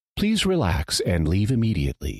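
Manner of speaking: smooth, calm, pleasant announcer voice. Recalling intercom announcements in the alien spa invasion sequence, mock pleasant announcer voice. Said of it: "de rigueur pleasant voice".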